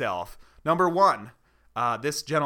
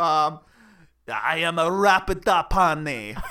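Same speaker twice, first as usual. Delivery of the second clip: bad fake Italian accent, louder, slower; 3 semitones higher, 4 dB louder than usual. Doing an accent for a partner to guess its origin, in a bad fake Italian accent. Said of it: "Is that Italian?".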